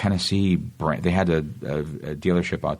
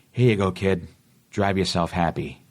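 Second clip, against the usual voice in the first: put-on Boston accent; 2 semitones higher than usual. Retelling the line he pitched for a commercial, handing something to a kid, in a boston accent. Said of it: "in the Boston accent".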